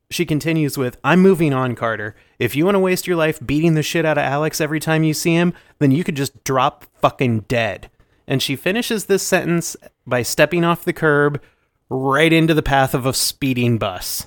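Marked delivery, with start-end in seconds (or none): none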